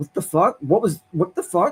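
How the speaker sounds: high, mock stunned, shocked outburst of disbelief. Retelling a drunk woman's reaction after being slapped in a bar: imitating a shocked reaction. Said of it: "she was just shocked".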